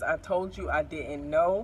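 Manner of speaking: ordinary delivery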